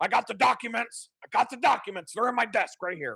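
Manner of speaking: high-pitched, ranting talk-radio pundit voice. Showing how they could rant about the government: Alex Jones impression. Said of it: "I could talk like that".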